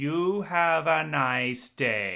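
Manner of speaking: loud, slow, debasing, condescending talking-down drawl. Recounting a story where a guard lets them in: mock-condescending guard. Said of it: "the guard very, like, debasing".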